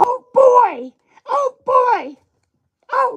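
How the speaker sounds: very high pitch, long and drawn out. Trying out character voices one after another: high-pitched Mickey Mouse voice. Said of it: "like a real high pitched Mickey Mouse".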